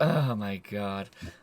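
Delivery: very quiet, low, exasperated sigh-words. Voicing a tired character reacting to another: exasperated sigh in character. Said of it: "She sighs so loudly and so obviously".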